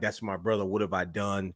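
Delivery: mock, acted-out tearful crying. Retelling a wrestling match where one wrestler starts crying; imitating someone crying. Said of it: "he starts crying like".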